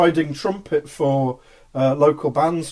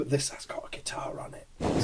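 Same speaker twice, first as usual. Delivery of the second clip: playful, very hushed stage whisper; 13 dB quieter than usual. Announcing the next track on the radio, a joking whisper. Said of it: "I'm just gonna whisper this".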